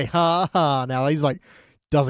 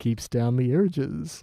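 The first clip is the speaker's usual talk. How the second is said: put-on confiding voice, quieter; 5 dB quieter than usual. Retelling how Ned delivers the line: Ned Flanders sex-tip voice. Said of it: ""Oh, here's a sex tip" kind of voice".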